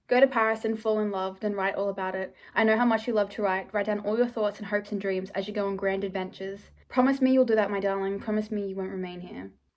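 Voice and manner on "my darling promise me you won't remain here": normal talking voice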